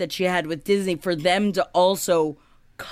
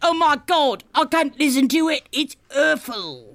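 put-on British accent, pitched up, played for laughs; 8 semitones higher than usual. Quoting Winslet on hating her American accent: Winslet British accent. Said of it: "That's what she says in my very good British accent".

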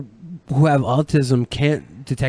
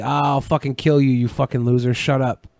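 ordinary delivery

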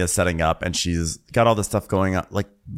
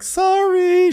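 very high, loud put-on crying voice, through sobs; 5 dB louder than usual. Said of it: "She starts crying".

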